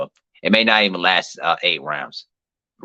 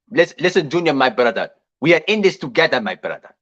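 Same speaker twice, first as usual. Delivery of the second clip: put-on Nigerian English accent, pitched up; 8 semitones higher than usual. Imitating how Nigerians sound while joking with friends: imitating a Nigerian accent. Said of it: "That's how them Nigerians sound".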